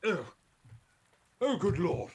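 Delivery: loud, swooping half-orc voice. Voicing a half-orc who was just freed from a snake: half-orc voice. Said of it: "this half orc".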